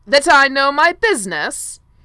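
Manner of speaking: very loud, booming voice. Lord Wilden cuts off the prince mid-sentence, booming. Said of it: "Lord Wilden boomed".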